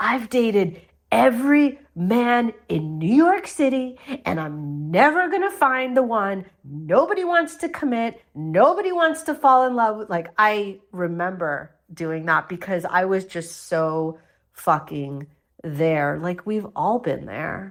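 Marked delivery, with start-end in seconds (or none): 0.0-10.1 put-on high, swooping drunken shouting outburst. Recalling being drunk at a dinner party, retelling own drunk shouting. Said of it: "basically shouting like".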